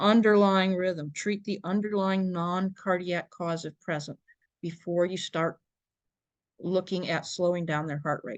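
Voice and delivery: ordinary talk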